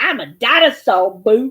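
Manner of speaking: put-on loud, sassy kid voice. Repeating the kid's catchphrase after the other speaker: imitating a sassy kid. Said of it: "Like that".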